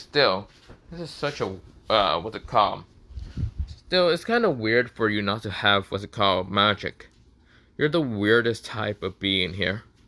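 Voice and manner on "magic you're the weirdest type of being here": ordinary delivery, nothing marked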